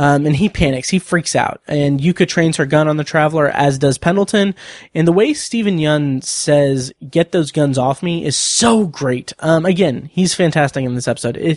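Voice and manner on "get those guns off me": ordinary talk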